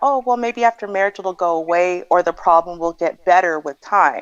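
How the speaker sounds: ordinary talk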